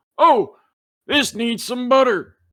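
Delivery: very high, loud, put-on country accent. Voicing a man who looks at the french toast, in a country accent. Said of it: "That country accent is coming out again".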